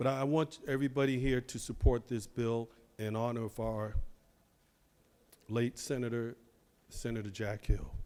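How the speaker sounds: soft, choked-up voice catching with emotion. Asking colleagues to support a bill in honor of a late senator: choked up with emotion. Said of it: "I'm a little choked up here".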